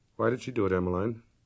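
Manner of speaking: very soft, quiet voice. Reading a story aloud, the doctor asks a question: very softly. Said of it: "very softly".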